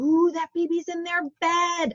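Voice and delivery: put-on high, engaging parentese baby talk voice. Demonstrating parentese while describing a baby in bed: high, engaging parentese voice. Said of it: "I turn on my voice really high, you know, kind of that, we would call it parentese".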